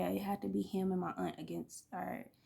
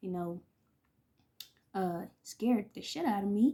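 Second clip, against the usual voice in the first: ordinary talk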